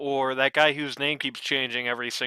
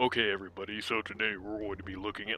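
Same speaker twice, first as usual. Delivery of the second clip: big, deep sports commentator voice; 5 semitones lower, 8 dB quieter than usual. Mocking how sports broadcasters sound once they pick up a mic: sports broadcaster big boy voice. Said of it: "like they do that big boy voice".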